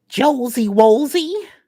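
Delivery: put-on heavy Jersey accent, very high and loud. Co-host chimes in on a joke about a game character, thick jersey accent. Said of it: "Some thick Jersey accent".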